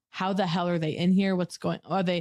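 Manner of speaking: ordinary talk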